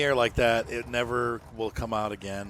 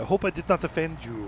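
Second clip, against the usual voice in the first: clumsy, bad, fake French accent, pitched up; 5 semitones higher than usual. Talking about a tractor, doing a bad fake French accent. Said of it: "This this is not a fake French accent at all".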